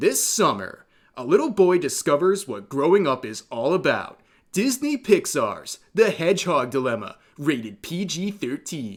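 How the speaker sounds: put-on movie-trailer narrator announcer voice. Reading a meme caption aloud as a fake movie trailer: movie trailer voice. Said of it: "let me read this in my movie voice".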